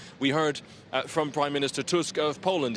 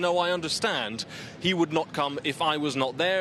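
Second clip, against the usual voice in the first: plain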